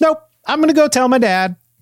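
put-on very high, small little girl voice. Voicing a little girl refusing a bribe: little girl voice. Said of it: "She takes the candy and then she says".

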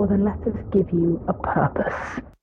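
muffled voice, sounding as if underwater. Narrator voicing three old men speaking at once, as if from underwater. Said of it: "It kind of sounds like they're talking from underwater".

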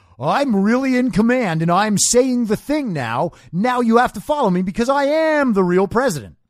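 harsh, overconfident delivery. Mocking how Joe Biden announces things: imitating Joe Biden, extra harsh and overconfident. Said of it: "announces it extra harshly, ex-, more confident than ever".

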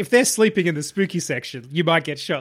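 ordinary talk, nothing marked

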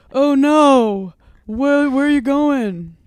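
loud, slow, stilted American dub-style delivery, not stretched. Mocking how dubbed shows sound, imitating bad american dub actors. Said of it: "the actors are always shite. Like, they're like".

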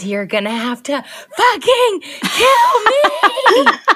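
shrill, very high scream, dragged out long. Imagining a part for an actress who is hard to get, acting out a woman's scream. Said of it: "And she screams".

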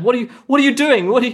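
distressed acted voice. Game master voicing Devin as an injured player falls behind: Devin, very upset. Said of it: "And Devin is very upset".

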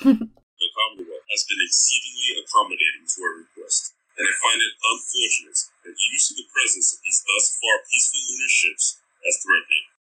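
deep, rich put-on character voice. A voice clip made for a listener, reading a book character's lines: deep, rich Amory Park voice. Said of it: "did a deep, rich Amory Park voice".

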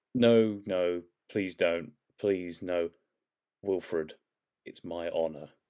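put-on tearful begging. Discussing a regeneration scene, a speaker acts out the needed mood in mock tearful pleading. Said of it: "the energy of".

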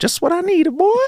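very high animated-sitcom cartoon voice. Speaker imagining himself ready with a hunting rifle, Family Guy character voice. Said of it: "Why did you sound like the guy from Family Guy?".

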